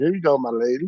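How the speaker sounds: genteel, prim, very proper courtly delivery. Teasing another speaker about how they said a line: imitating someone saying it all proper. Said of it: "Said all proper".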